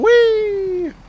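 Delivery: high, loud, gleeful, joyous whoop. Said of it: "with his hands in the air yelling".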